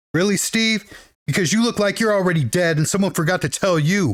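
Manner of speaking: ordinary talk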